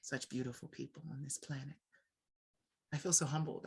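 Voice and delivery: fighting off tears while speaking, holding them back. Speaker thanking everyone who interviewed with them, holding back tears. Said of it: "I'm trying not to cry".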